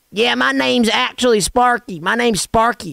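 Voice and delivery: put-on broad, thick Southern accent. Retelling what a man said when asked his real name, imitating Sparky's Southern accent. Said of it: "It was real Southern".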